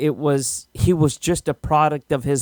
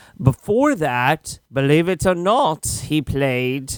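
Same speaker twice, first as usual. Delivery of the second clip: very bad, fake British accent. Listing an actor's early roles, slipping into a bad british accent. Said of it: "that's my worst British accent ever".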